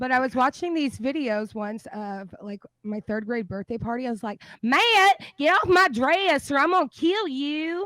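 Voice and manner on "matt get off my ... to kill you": thick Texas drawl, very high-pitched, shrill and loud. Asked to lean into the accent, quoting a childhood line: strong texas accent. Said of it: "really lean into the Texas accent".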